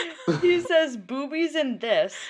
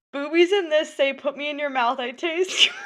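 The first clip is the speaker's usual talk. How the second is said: high-pitched, words breaking up with laughter; 6 semitones higher than usual. Finally getting the line out after failed attempts, laughing while talking. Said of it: "I can't".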